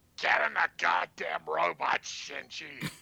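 slow, drawn out, rough, creaky put-on voice. Voicing Gendo with a borrowed voice: attempted Gilbert Gottfried impression. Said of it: "That sounded more Vince McMahon than Gilbert Gottfried".

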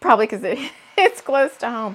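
talking through laughter. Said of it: "I don't know why I'm laughing".

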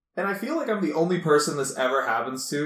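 plain

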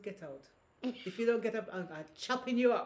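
put-on Grenadian-accented speech. Retelling what a woman told a man, Grenadian accent. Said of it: "I'm doing with my Grenadian accent".

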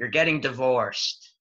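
play-acted, very loud, booming yell. Retelling a lawyer yelling in front of his friends: imitating a loud yell. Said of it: "the lawyer just yells in a very loud voice".

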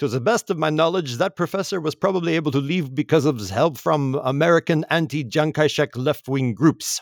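put-on German accent. Quote what Kissinger adds about the professor's escape, in a Kissinger accent. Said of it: "Nice Kissinger accent there".

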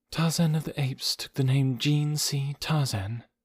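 flat, lifeless monotone voice. Jane explains Tarzan's name to Hazel, lifeless monotone. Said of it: "in the same lifeless monotone".

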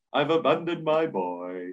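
lazy, weak, half-committed delivery. Showing how not to do a film character impression: half-arsed Daniel Plainview impression. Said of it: "an impression that you can't do half-arsed".

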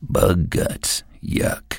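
whispered, breathy grumble of disgust. Riding in the car, he reacts each time a bug hits the windshield, muttering. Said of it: "he muttered".

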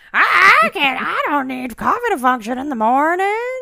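very high-pitched, loud, shrill character voice. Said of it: "You sounded a little bit like cornbread there".

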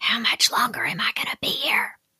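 cross, angry whisper. Recounting a long appointment that kept running on, retelling an angry whisper. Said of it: "ask in an angry whisper".

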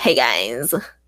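put-on nasal voice. Speaker mimics Erica's greeting to show how her voice changed: nasal Erica impression. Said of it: "really emphasizing the nasaliness of her voice".

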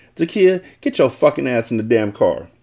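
ordinary delivery

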